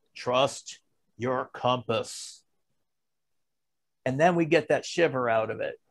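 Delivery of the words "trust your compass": big, deep, soft bass wise mentor voice. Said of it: "Now I go to this side".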